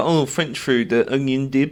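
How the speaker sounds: put-on French accent. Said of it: "he done quite a good French accent".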